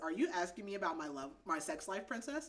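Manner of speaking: normal talking voice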